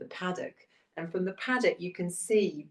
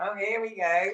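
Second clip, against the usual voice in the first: mock, very slow, easygoing, calm chuckle; 3 semitones higher than usual. Retelling a friend walking an excited horse back: imitating friend laughing calmly. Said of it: "she's just laughing, going".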